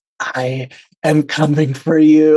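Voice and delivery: close, intimate whisper. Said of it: "you're whispering it into her ear".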